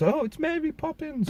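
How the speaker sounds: adoring, high-pitched gushing.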